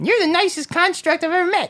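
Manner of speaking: tiny, very high-pitched, squeaky little voice. Voicing a character talking to a construct, in a really squeaky voice. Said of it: "he's got a really squeaky voice".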